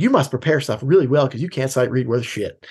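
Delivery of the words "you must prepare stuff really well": ordinary delivery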